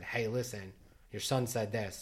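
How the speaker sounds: plain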